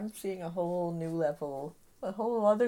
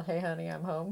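plain

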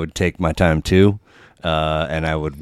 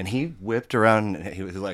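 ordinary talk

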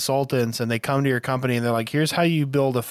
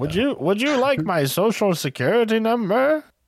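put-on old person voice, higher; 9 semitones higher than usual. Acting out answering a phone scammer's call: put-on old person voice. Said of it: "You don't have to overdo it like that".

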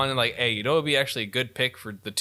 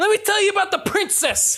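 very high, loud, raised ranting voice; 5 dB louder than usual. Imagining Mario voiced by Bill Burr: Bill Burr ranting. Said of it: "Bill Burr is just gonna be like".

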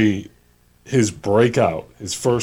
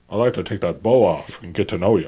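Scottish accent, movie-star style impression. Showing the only impression you can do, perform Sean Connery as done by Robin Williams in Mrs. Doubtfire. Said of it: "I can only do Sean Connery as done by".

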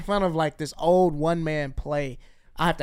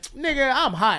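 put-on laughing artist voice, higher pitch; 8 semitones higher, 3 dB louder than usual. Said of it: "Paperboy's laughing like".

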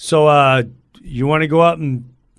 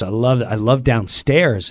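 plain

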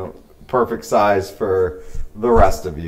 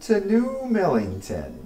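high, hushed, swooping, sing-song tiny voice, soft and lilting; 10 semitones higher, 5 dB quieter than usual. Game master voicing Anson, the halfling mayor, to the players: Anson the halfling mayor voice. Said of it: "you're approached by a smaller halfling. He's maybe 2.5 feet tall. He's wearing real baggy clothes, so he kind of like waddles while he walks. He's got a full beard".

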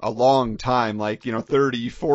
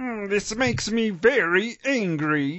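very slow, high cartoon voice, every word stretched; 8 semitones higher than usual. Imitating a favorite cartoon voice: Marvin the Martian voice. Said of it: "the only one I feel I could somewhat imitate".

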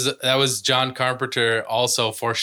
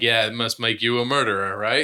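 ordinary talk, nothing marked

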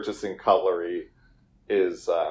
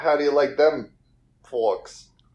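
put-on Boston accent with raised pitch; 5 semitones higher than usual. Imagining a celebrity brand ambassador, Ben Affleck Boston accent. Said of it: "Boston accent".

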